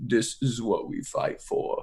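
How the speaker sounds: low, gravelly half-whisper. Retelling a scene where they get off the plane, low grovelly Vin Diesel voice. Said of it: "talks in a low, gra- like grovelly voice".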